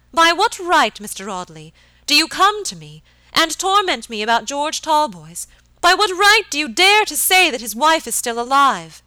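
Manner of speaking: piercing, shrill, loud tone, deeply agitated. Narrator reads a lady confronting mr. audley, in a shrill piercing agitated voice. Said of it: "her voice rising to that shrill and piercing tone".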